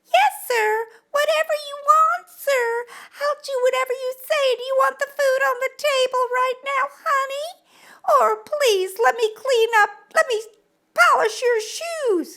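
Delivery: very high, meek, mealy-mouthed cartoon-girl voice. Addressing men, act out a mealy-mouthed woman speaking to her man, talking like Betty Boop. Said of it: "I'm talking like like Betty Boop".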